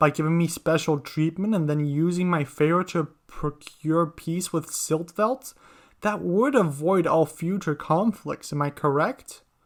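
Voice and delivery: ordinary talk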